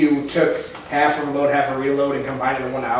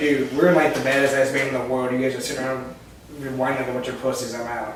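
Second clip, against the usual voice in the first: ordinary talk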